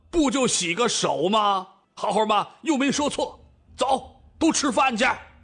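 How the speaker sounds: high, roaring, bellowing yell. Narrator reads a character yelling at another after pulling a third away: yelling. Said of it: "冲着赵正大吼道".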